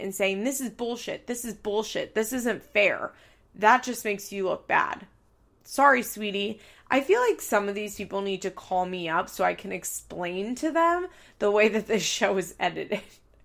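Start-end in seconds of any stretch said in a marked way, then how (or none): 0.4-3.1 mock exasperated huffing and puffing. Imitating a cast member complaining while rolling her eyes: imitating someone huffing and puffing. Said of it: "rolling your eyes and you're huffing and puffing".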